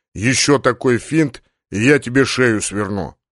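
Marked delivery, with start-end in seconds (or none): none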